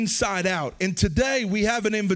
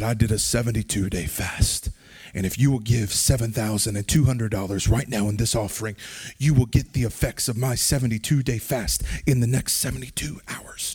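mock whisper, lower pitch; 10 semitones lower than usual. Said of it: "She whispered".

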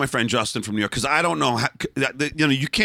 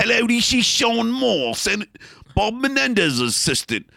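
really bad, pitched-up fake British accent; 9 semitones higher than usual. Retelling calling as someone's assistant, bad fake British accent. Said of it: "So I call with this bad British accent".

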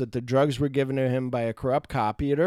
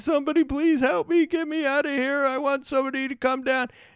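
very high-pitched, tearful, sobbing, pleading tone; 13 semitones higher than usual. Retelling a film scene where a character cries for help: imitating someone crying and pleading. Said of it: "he just starts crying and he's like".

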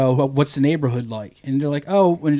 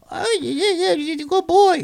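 put-on baby talk, much higher pitch, slower pace. Retelling how he talks to them when they behave, in baby talk. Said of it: "me talking baby talk to them".

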